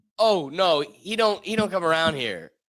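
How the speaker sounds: slow, stumbling, drawn-out delivery. Retelling what she said when she answered the door: imitating her. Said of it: "she answered the door and was like".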